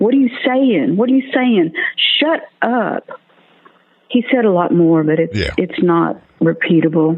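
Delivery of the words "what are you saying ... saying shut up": furious, hostile, high-pitched angry yelling. Retelling how a man yelled at the speaker during prayer, retelling a yell. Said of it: "and he started yelling".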